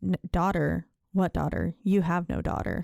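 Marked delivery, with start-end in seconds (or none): none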